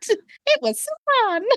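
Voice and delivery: squeaky voice, pitched very high. Teasing a co-speaker for how their answer started off, sound a little like Mickey Mouse. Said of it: "like a little Mickey Mouse on that".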